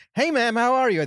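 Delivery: very high-pitched put-on telemarketer voice. Imitating a telemarketer calling someone: imitating a telemarketer. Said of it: "when somebody calls you with telemarketing, it's like".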